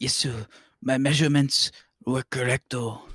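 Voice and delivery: exaggerated, put-on Chinese accent. Improvising as Sonic's extra doctor in a comedy story, exaggerated Chinese accent. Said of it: "these are big words for me to try to do this voice in".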